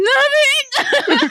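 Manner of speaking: high-pitched squeak with voice cracking. Retelling a film scene, answering "Nothing", imitating Ben Affleck's voice cracking. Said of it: "Ben's voice cracks".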